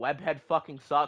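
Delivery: ordinary delivery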